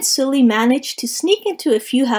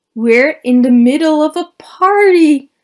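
loud exclamation, voice climbing throughout; 3 semitones higher, 7 dB louder than usual. One of two intruders realizes they have crept into a party, exclaiming. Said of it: "Mike exclaimed".

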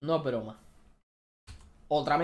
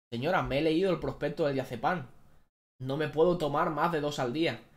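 ordinary talk

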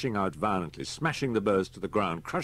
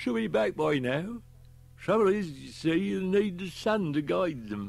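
put-on slightly slurred words, higher pitch; 11 semitones higher than usual. Herbert continues talking to Harry, his words slurring slightly. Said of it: "[name] Brown was worried about his pigeons. He drained his whiskey and stared at the empty glass for a moment".

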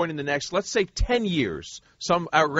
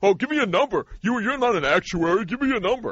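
high, scornful, mocking, dismissive parody voice; 5 semitones higher than usual. Mimicking the other speaker's demand for a number: mocking imitation of someone dismissive. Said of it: "'Cause you're being so dismissive".

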